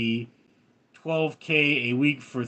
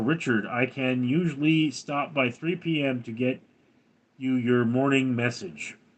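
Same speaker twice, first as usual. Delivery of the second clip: ordinary talk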